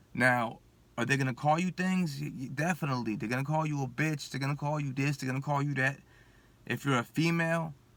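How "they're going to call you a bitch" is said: normal talking voice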